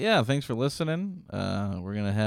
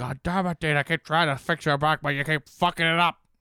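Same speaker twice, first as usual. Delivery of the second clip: griping, complaining voice, pitched up; 5 semitones higher than usual. Acting out the chiropractor's complaint about a crooked back: imitating a chiropractor. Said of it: "It's like".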